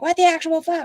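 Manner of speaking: high, stressed-out, frustrated screaming outburst. Retelling yelling at home over coworkers' questions: imitating own screaming. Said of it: "and I'm at my house screaming".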